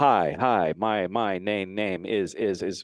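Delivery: very slow, lagging, stuttering echo delay repeats. Showing what a voice in the ear sounds like: imitating satellite delay echo. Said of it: "it's gonna be like the old satellite delay".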